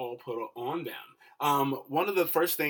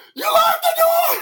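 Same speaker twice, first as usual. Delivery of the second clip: put-on shrill, very high, very loud childlike shriek; 14 dB louder than usual. Describing the movie scene where the Porsche rolls, imitating a child's scream. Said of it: "he just lets out this scream".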